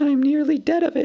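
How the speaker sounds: weak, faint, very high little voice. Reading a story, Bilbo speaks after Gandalf, in Bilbo's weak little voice. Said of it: "in a weak little voice that nobody heard".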